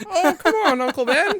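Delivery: shrill, loud, very high naive-hero voice. Showing what the early, young hero is like, do a good early Luke Skywalker impression. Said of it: "Pretty good Luke Skywalker impression".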